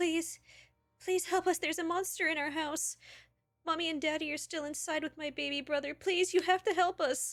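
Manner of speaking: put-on very high, loud, tearful pleading child's cry. Narrator voicing a girl begging the players for help, crying out. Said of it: "crying out".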